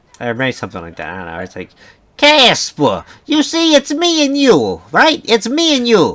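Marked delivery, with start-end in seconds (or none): 2.2-6.2 put-on Jersey mobster voice, very high, swooping. Speaker imitating how a man talks to Casper, mafia gangster voice. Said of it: "he talks like a gangster basically or a mafia guy".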